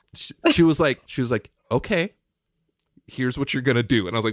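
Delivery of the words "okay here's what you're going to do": imitated calm teacher-like voice. Retelling how Lauren told the speaker what to do: imitating Lauren, calm like a teacher. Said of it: "as calm, like a teacher".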